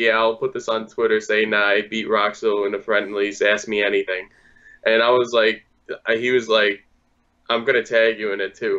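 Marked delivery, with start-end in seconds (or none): none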